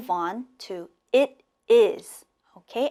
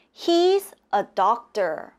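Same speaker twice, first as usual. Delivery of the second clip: pitch drops away on "doctor". An English teacher demonstrates statement intonation for learners, with falling intonation. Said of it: "the intonation is going down".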